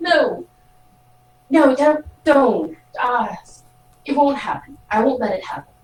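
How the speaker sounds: slow, concerned, earnest, worried pleading. Voicing a character pleading with a sibling, acting concerned. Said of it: "looking really concerned".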